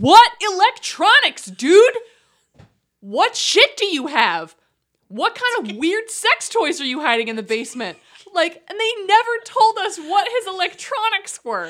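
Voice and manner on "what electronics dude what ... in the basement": animated, loud, swooping, drawn-out shouting. Retelling how the speaker and a boyfriend reacted to an episode, retelling a shout. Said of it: "we were just shouting like".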